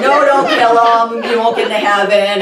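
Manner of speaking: ordinary talk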